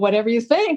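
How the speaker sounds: play-acted snide, sarcastic twist. Retelling how the speaker began twisting the phrase, mock-sarcastic tone. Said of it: "I kind of started getting sarcastic about it".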